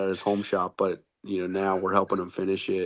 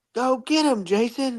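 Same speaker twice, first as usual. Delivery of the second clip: acted, shrill, very high-pitched, drawn-out scream. Retelling how his wife reacted to a crash: imitating wife screaming. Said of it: "she's screaming at me".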